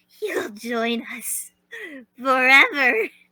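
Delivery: slow, put-on jackal character voice. Trying out a line on request in a put-on jackal voice. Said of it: "Let me try saying you'll join us in my jackal voice".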